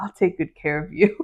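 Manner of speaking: whispering. Reading a book passage aloud where a character leans in: whispering. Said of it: "He leans in and whispers".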